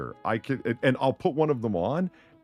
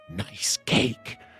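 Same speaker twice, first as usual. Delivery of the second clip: put-on harsh, raspy whisper. Retelling leaning close to someone's ear while she baked: imitating own harsh raspy whisper. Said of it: "said it with the harsh, you know, raspy throat".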